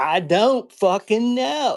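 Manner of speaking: play-acted very high, very loud, slow, drawn-out rude sass. Retelling its answer to simple questions: imitating a sassy rude reply. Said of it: "she got really sassy and she's like".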